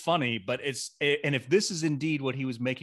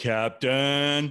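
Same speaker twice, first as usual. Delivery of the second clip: mocking, exaggerated, drawn-out parody delivery, louder; 4 dB louder than usual. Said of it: "I don't even say it that way".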